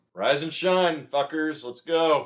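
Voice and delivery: rousing, loud, high-pitched yell. A player's character wakes the others at sunrise, yelling out. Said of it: "I just yell out".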